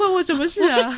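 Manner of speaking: acted sobbing voice, high and tearful. Speaker acts out the clothes dryer's reply, imitating a dryer crying. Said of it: "他一边哭一边说".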